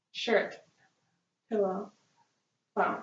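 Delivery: whispered words. Doing a whisper voice test with one ear covered: whispering. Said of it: "I'm going to whisper in the other".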